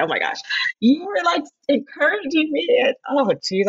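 on the verge of crying, choking up. Thanking Jenna for encouragement when nervous: choking up. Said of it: "and I'm going to cry".

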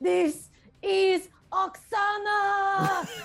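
in-character furious rage yell. Finishing off a clinging creature as her character: in-character rage yell. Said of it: "she's gonna yell".

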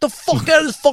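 very high, shrill, full-blown furious screaming yell. Retelling ordering a drunk stranger out of the car like Joe Pesci. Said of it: "I was like Joe Pesci from fucking Goodfellas".

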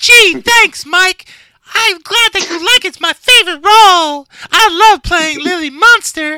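very high, loud, squeaky voice. Pretending to be the actress thanking Mike for the praise: Sheri Moon impression. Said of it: "She sounds like Mickey Mouse".

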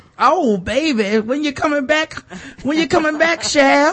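very high put-on seventies grandma voice. Joking about an old-sounding voice sample, imitating a seventies grandmama. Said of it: "somebody's seventies grandmama".

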